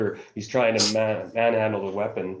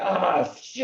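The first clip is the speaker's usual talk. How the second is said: high, pained, hurt yelp; 10 semitones higher than usual. Voicing a soldier shot in the arm: wounded soldier screaming in pain. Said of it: "he's screaming in some Polish".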